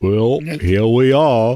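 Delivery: put-on slow southern drawl. Joking that a character now talks like Forrest Gump: Forrest Gump voice. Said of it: "That's Julian's new voice".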